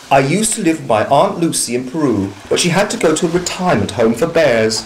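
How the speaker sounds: usual speaking voice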